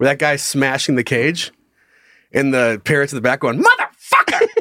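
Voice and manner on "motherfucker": mock screaming parrot voice, higher pitch. Retelling a parrot swearing while a man smashes its cage: imitating a screaming parrot. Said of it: "And he's just screaming".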